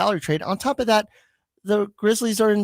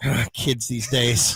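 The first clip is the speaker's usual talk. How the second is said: mock muttering under the breath, lower; 8 semitones lower than usual. Retelling what an older man at the card table said: imitating someone muttering under his breath. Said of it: "under his breath, he went".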